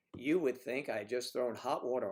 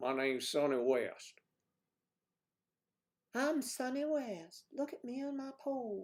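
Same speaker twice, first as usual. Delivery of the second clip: bad put-on stripper voice, very high and slow; 11 semitones higher than usual. Riffing on the stage name sunny west, the speaker does a bad pole dancer impression. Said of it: "That's a pole dancer, how they sound".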